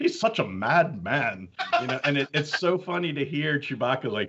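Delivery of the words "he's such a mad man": put-on slow, Welsh-tinged British accent. Retelling an actor in costume saying his lines: imitating Peter Mayhew's Welsh accent. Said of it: "talking this Welsh, British accent".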